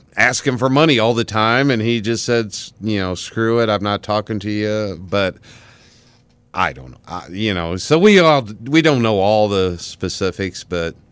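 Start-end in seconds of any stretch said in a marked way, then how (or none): none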